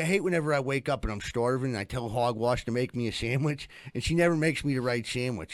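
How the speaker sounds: ordinary delivery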